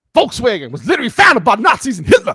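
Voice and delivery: very loud swooping high voice. Asked to read the line in the Hodge twins' voice: Hodge twins voice. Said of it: "read it in Hodge twins' voice".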